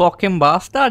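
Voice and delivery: sounding Indian. Trying to swear in someone else's accent among joking speakers: indian accent. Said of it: "You sound Indian".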